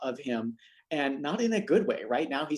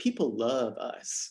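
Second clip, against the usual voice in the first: put-on slow drawl with Southern accent. Quoting Tim Cook's fallback point from prepared testimony, Tim Cook Southern accent. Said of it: "He does that in a better Southern accent than I just delivered".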